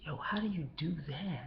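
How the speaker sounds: soft, breathy, close voice.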